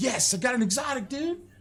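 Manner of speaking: put-on shrill, very high-pitched scream. Retelling a reaction to getting an exotic: imitating screaming. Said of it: "You were screaming".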